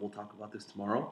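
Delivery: quiet, hushed aside, as if privately. Speaker acts out a woman pulling someone aside to speak: said quietly. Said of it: "quietly pulls you aside and says".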